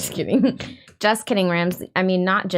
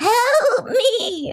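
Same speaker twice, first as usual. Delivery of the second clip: put-on very high, pleading, crying old-lady voice; 13 semitones higher than usual. Copying a friend's old-lady impression, the speaker repeats her plea, imitating an old lady's plea. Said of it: "I'm doing an old lady".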